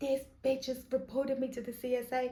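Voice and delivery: furious, angry screamed rant. Imagining how the payer reacted to the new payment: imitating someone screaming. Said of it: "I know he sat there screaming".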